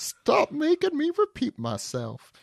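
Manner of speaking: put-on storybook villain voice. Acting out a line from the chapter as Rock: Rock voice. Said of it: "these are the voices I'm doing for Noah".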